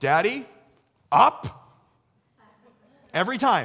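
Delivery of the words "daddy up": put-on loud, blunt small-child voice. Retelling what the two-year-old says at the hoop: imitating Evie. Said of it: "She just looks over at me and goes".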